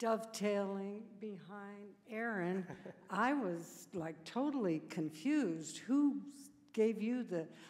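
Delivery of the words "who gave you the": loud, aggressive, challenging tone. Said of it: "sorry, that sounded aggressive".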